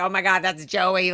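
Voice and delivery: ordinary talk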